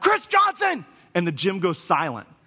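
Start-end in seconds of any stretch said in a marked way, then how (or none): 0.0-0.8 very high, shrill, loud, raging scream. Retelling how a college coach screamed at a player: imitating a coach screaming. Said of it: "he screams at him".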